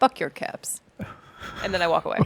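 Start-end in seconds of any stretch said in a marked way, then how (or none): 0.0-0.8 menacing, intimidating, threatening whisper. A player's character stands and intimidates a grouchy old man: menacing whisper. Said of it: "I stand up and I whisper to the guy".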